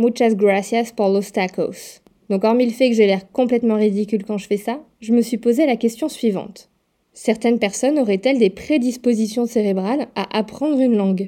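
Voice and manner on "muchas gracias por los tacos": Spanish spoken with an English accent. Showing how a spanish phrase sounds said with an english accent: spanish with an english accent. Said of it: "dire une phrase en espagnol avec un accent anglais".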